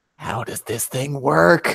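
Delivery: whispering in a put-on voice. Speaking in character to another character during the game: whispering in character. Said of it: "I'm just gonna kind of whisper".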